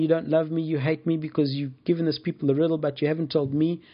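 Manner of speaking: mock weepy, sobbing, tearful crying voice. Retelling a woman's complaint to Samson: imitating a sobbing woman. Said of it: "she's sobbing, she's crying".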